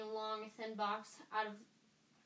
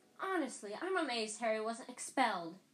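plain reading voice

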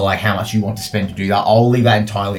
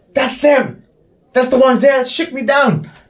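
very high shrieking scream; 4 dB louder than usual. Game master voicing the blue tiefling girl spotting the party, screaming out an accusation. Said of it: "notices you and screams out".

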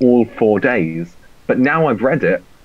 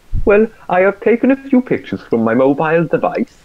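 higher-pitched mock Welsh accent; 6 semitones higher than usual. Asked to do an accent of his choice for the others to guess: welsh accent. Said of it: "That's Welsh".

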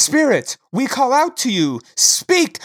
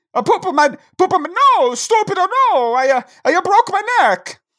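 hammy, fake Italian accent with a higher pitch; 8 semitones higher than usual. Playing an Italian ghost speaking through a psychic: put-on Italian accent. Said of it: "because I'm Italian".

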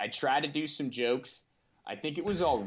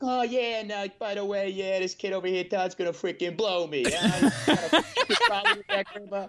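super aggressive, pitched-up tirade; 8 semitones higher, 4 dB louder than usual. Retelling a stand-up bit, playing his brother coming out: imitating Tony Soprano, super aggressive. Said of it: "like a Tony Soprano character, just super aggressive".

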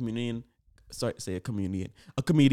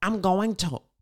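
small, pitched-up, tiny little voice; 7 semitones higher than usual. Reenacting the situation on audio, the speaker does Chris Rock's little voice. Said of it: "That was Chris Rock".

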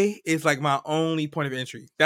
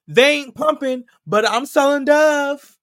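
very high, shrill, loud hollered scream; 10 semitones higher, 7 dB louder than usual. Retelling what a lady at a gas station screamed: imitating a lady screaming. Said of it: "this lady screams".

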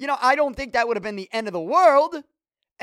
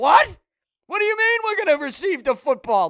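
held-back, mild yelling; 4 semitones higher than usual. Recalling hearing the official's announcement as the game started, retelling his yell at the TV. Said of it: "yelling at the TV".

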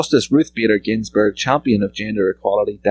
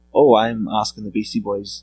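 plain

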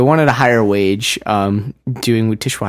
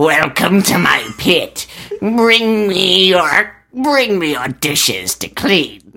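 put-on goblin voice, much higher pitch; 7 semitones higher than usual. Describing washing dishes at work, greeting people in a goblin voice. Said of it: "I only become a goblin".

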